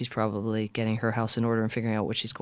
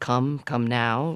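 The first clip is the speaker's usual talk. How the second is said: mock very stern, strict, no-nonsense delivery; 4 dB louder than usual. Retelling the mother's words at the door late at night: imitating a very stern voice. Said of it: "in a very stern voice".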